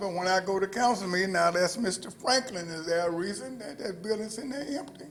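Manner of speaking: ordinary talk, nothing marked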